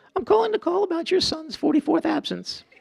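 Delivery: very high, warm, gracious, polished voice. Imitating Sherry gracefully delivering bad news by phone: imitating Sherry's warm, gracious phone voice. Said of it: "That's warmth, that's grace".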